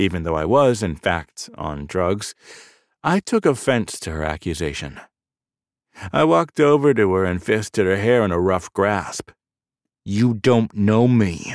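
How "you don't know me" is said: slow, spoken through gritted, clenched teeth. Gripping a woman's hair after her accusation, the narrator speaks through clenched teeth. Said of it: "I said through clenched teeth".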